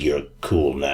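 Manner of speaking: made-up voice of a dragon. Retelling a game's story where you hear the dragon speak: imitating the dragon's voice. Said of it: "you hear the dragon's voice being like".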